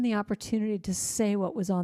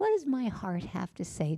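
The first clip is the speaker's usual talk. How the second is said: put-on little childlike voice, like a five-year-old; 3 dB quieter than usual. Demonstrating how to ask what your heart has to say, in a little childlike voice. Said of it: "do it like in this little voice".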